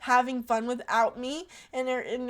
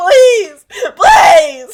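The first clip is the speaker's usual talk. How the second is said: mock very loud, swooping, desperate sobbing; 8 semitones higher, 21 dB louder than usual. Retelling calling Josh from a parking lot, acting out crying pleas. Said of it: "And then I started crying".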